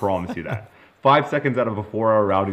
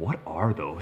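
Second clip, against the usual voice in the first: whisper, much quieter; 6 dB quieter than usual. Retelling a man's remark from a video clip, retold whisper. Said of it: "And he whispers".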